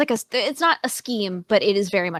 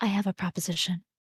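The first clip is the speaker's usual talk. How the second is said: soft, hushed half-whisper at close range; 7 dB quieter than usual. Leaning in close to a waking companion at night: half-whispering. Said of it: "She's, like, whispering".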